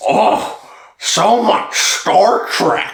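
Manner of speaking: very slow, drawn-out delivery. Quoting what the other speaker said before the podcast: imitating the other speaker. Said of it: "Is that a good impression of you?".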